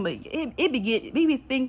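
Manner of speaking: stammering over words. Mid-rant at people about end-stage capitalism, the speaker trips up: stuttering. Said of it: "I'm sorry, I'm stuttering".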